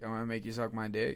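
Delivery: ordinary talk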